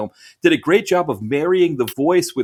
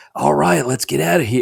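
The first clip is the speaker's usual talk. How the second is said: put-on raspy American accent with an Irish tinge. Retelling a line from the movie's overdub: raspy dubbed Seagal voice. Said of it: "it was, like, raspy".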